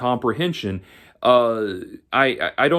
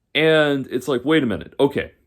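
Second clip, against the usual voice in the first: ordinary talk, nothing marked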